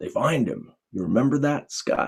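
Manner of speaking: put-on low, gravelly preacher's voice. Speaker retells his dad quizzing him about a movie, low gravelly preacher's voice. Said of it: "in his low, gravelly preacher's voice".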